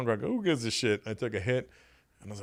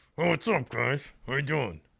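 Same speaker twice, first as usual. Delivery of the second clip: put-on speech through clenched teeth, higher pitch; 3 semitones higher than usual. Imitating a friend's father on crack greeting the kids, talking through clenched teeth. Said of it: "Eyes wide open, teeth clenched".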